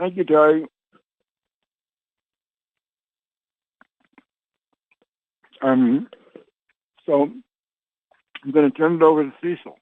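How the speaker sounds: speaking through food. Speaker thanking someone and handing over to the next speaker, talking while chewing. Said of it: "Excuse me for chewing".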